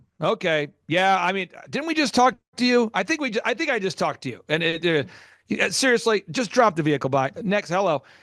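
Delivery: ordinary talk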